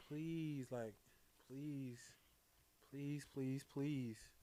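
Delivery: acted, repeated pleading, please after please. Retelling a woman's repeated request, imitating someone begging. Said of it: "Why are you begging?".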